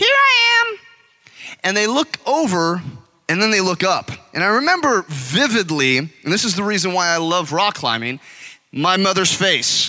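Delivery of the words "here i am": small, tiny, squeaky voice, very high. Retelling how, as a hidden child, he answered his searching parents, small squeaky voice. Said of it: "this small little squeaky voice".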